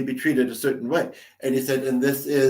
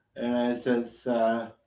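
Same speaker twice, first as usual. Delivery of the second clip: normal talking voice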